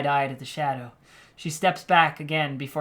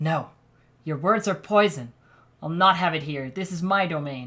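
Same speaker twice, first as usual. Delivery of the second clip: cold, icy, unyielding voice. Narrating a story, voicing Leandra's reply to her foe, in a cold, icy voice. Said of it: "[name], the mother, / There is a fire in [name] as she moves towards the two women with intent. / she says in a cold, icy voice".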